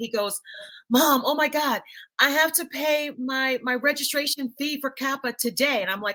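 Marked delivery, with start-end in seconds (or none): 0.9-5.8 frantic, totally panicked voice. Mother retelling her son calling her about a fee: imitating a panicked son. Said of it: "he called me in a panic".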